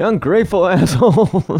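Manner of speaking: put-on high-pitched shouting. Retelling a movie scene where the surgeon yells at his patient: imitating a shout. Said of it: "shouting at him".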